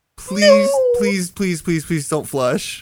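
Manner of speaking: mock-pleading, imitated begging tone. Retelling what a man kept asking of him, imitating begging. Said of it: "He's just begging to me".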